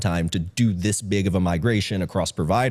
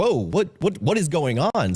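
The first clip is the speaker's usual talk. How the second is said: put-on, high, panicked, freaked-out alarm; 9 semitones higher than usual. Retelling his reaction to outage messages on landing: imitating someone freaking out. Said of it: "freaking out".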